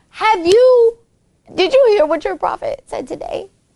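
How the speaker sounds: put-on talking while laughing. Retelling how non-Muslims taunted a believer: imitating mockers cracking up while talking. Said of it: "as they're cracking up, they're like".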